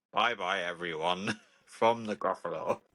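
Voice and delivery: very low, deep, slow puppet voice. Podcast host says goodbye to listeners at the episode's end in a Gruffalo voice. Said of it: "do a different voice that's not Bane and say goodbye".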